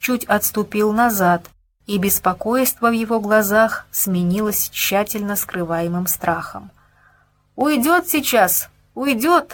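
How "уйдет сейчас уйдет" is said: high-pitched shout. A woman in the displeased village crowd calls out at the man, shouting. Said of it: "выкрикнула из толпы еще одна женщина".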